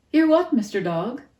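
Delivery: very loud, high, cheerful voice. Narrator reads a character's reply to a hissed question, cheerful. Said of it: "Bony sounded cheerful".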